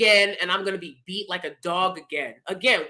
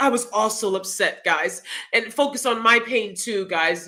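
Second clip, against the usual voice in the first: ordinary talk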